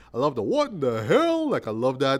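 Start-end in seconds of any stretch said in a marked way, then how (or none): 0.5-1.5 very high, pitched-up cartoon dad voice. Fan praising a cartoon show, quoting its lead in a Hank Hill impression. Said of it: "I just love his voice".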